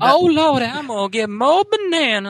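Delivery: very high, very loud, shrill diner waitress voice. Doing an impersonation bit, the speaker slips into a put-on diner waitress voice. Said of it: "became like diner waitress".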